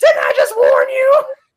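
shrill, very loud, high squealing character voice. Retelling a movie scene where he points the bat, the speaker does an Adam Sandler impression. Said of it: "What's that voice?".

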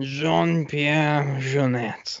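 exaggerated French accent. Asking a co-host to repeat a name, demonstrating it with an exaggerated french accent. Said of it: "with more French accent affectation".

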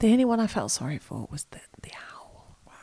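soft, hushed, secretive whisper. Talking with another speaker about tame animals being handled: whispering. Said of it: "Why are you whispering?".

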